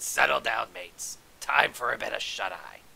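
stern, gravelly voice. Someone in an old cave addressing his mates; stern, gravelly voice. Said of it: "A stern, gravelly voice said".

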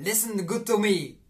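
slow, put-on Russian accent on English words. Speaker tries an English line the way Russians speak: put-on Russian accent. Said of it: "zo'n Russisch accent op Engels".

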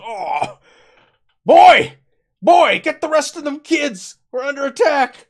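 very high, very loud alarmed yell, backwoods sound. Voicing a shot character calling for the kids: shocked alarmed yell. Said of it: "He goes".

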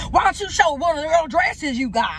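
heavy put-on Southern accent. Imitating the voice used for her father, exaggerated southern accent. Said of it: "the voice for her father was like".

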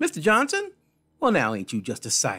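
loud, cheerful, sing-song, matronly voice. A woman behind a desk greets a gentleman, in a happy matronly voice. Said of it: "matronly voice said happily".

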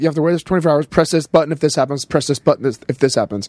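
plain

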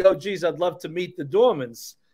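ordinary delivery

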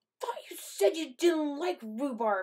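tight-lipped. After chewing sour rhubarb, the narrator remarks to a man still eating, through pursed lips. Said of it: "I said through pursed lips".

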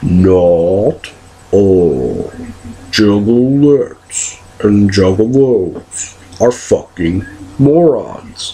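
very slow, deliberate, each word separate. Speaker answers people being hostile, saying it just once: very slow. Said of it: "I'm just going to say it really slow one time".

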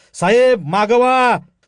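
desperate yell. A man warns his superior of a snake right beside him, shouting with all his might. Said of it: "कदम जीवाच्या आकांतानं ओरडला".

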